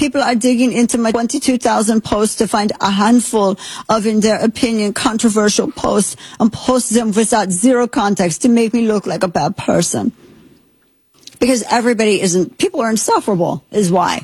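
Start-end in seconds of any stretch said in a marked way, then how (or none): 0.0-10.1 fake German accent, higher pitch. Reading aloud someone's post about deactivating his account: put-on german accent. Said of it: "I'm just assuming German accent".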